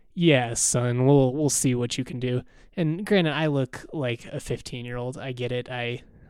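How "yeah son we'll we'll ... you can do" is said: normal talking voice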